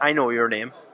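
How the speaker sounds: put-on Irish accent on a short line. Pressed to repeat yesterday's line, the speaker says it in an Irish accent. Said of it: "doing your Irish accent".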